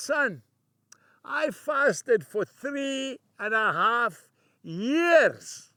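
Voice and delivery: put-on strong Scottish accent, years drawn out. Quoting his father's reply to him, in a broad scottish accent. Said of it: "He had a very broad Scottish accent".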